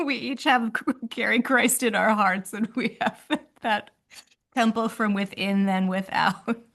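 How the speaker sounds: talking with a laugh through the words. Talking about carrying Christ in our hearts, laughing while talking. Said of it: "I'm laughing".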